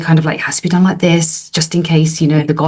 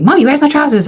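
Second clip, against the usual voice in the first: mock harsh, stressed-out, high-pitched voice; 10 semitones higher than usual. Retelling a son's demand about missing trousers: imitating a harsh demand. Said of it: "he got quite harsh with me".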